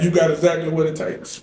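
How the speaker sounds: plain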